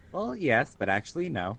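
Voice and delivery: ordinary talk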